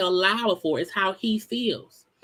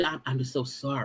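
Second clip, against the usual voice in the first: put-on sincere apologetic voice, lower and quieter; 7 semitones lower, 8 dB quieter than usual. Retelling his apology to his ex-wife: imitating Martell's sincere voice. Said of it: "in a sincere voice".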